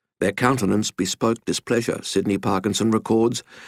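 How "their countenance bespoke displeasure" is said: plain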